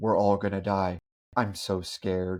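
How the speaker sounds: put-on dead, expressionless, low, flat monotone. Reviewing a movie, imitating how its lead actress delivers a line, super monotone. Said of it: "super monotone".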